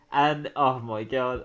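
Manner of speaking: normal talking voice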